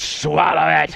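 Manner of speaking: hellish, rough, creaky devil growl. Retelling how Arlene ordered the kids: imitating a hell devil voice. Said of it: "and that hell, de-, de-, devil voice".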